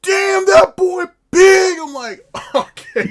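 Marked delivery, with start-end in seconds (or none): 0.0-1.8 very loud, very high, drawn-out shouted holler. Recalling a man who walks into the store, the speaker is imitating him yelling loudly. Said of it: "he yells loud as shit".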